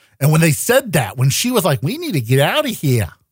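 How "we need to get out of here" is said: bad put-on New York accent. Retelling what she said in the scene: shitty New York accent. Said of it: "in her shitty New York accent".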